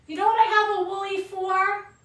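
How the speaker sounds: fake Italian mother voice. Retelling what her mother says while cooking: imitating her Italian mother. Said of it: "she's an Italian mother".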